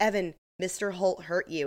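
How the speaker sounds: ordinary delivery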